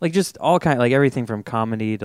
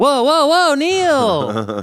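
very high, loud, slow, drawn-out swooping cry; 7 dB louder than usual. Retelling another comic's one-word impression, as Alfonso Portela. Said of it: "one-word impressions of, like, like Alfonso Portela".

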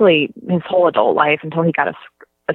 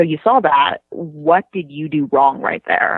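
mocking, put-on condescending tone. Speaker retells supervisors questioning a server over security footage, mimicking condescending supervisors. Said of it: "talked to her like very condescendingly".

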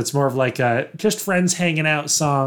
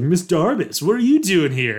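put-on a touch of swooping Californian accent; 4 semitones higher than usual. Retelling what Jason said to Miss Darbus: slight Californians voice. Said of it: "a little bit of a Californians voice".

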